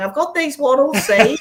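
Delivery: small, squeaky, very high voice. Describing a little voice piping up amid talk of travel borders; Horton Hears a Who little voice. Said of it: "here's this little voice going".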